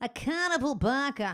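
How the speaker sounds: showy New England Boston accent. Trying out an accent on the phrase carnival barker, Boston accent. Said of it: "How's that for a New England, a Boston accent?".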